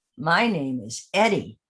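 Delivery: low, slow, unhurried elephant voice. Speaker voicing two characters introducing themselves, giving the elephant Eddie's low voice. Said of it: "has a much lower voice".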